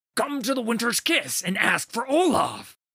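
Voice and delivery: very high-pitched, shrill shouting. Narrator voicing the grinning fisherman calling out to the listener: shouting. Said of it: "he thought this might be the moment he would achieve the glorious death he sought. / [name]'s frost-scale hauberk was covered in blood and viscera. He grunted as he swung his axe one-handed. Bone shea".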